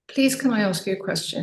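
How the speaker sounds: mild, really gentle, tender delivery. Retelling asking a question of the angry man in his cab: imitating own gentle tone. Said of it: "I said it in a really gentle way".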